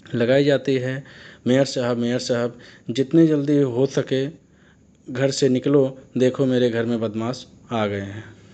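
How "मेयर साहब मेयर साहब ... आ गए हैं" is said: normal talking voice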